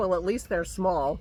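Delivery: snide, snarky little quip. Retelling Dennis's reaction to the speaker's purchase, imitating Dennis's snarky voice. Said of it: "in his snarky voice".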